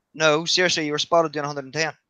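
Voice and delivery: ordinary talk, nothing marked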